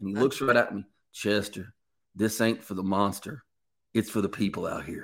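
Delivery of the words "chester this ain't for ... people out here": put-on Southern drawl, lower pitch. Retelling what a man holding a gun told him, in a southern drawl. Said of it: "he had that Southern drawl".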